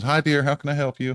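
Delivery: fifties lady voice. Playing a lady who walks up to the window to greet visitors: woman in her fifties. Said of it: "like a lady in her fifties uh, walks up".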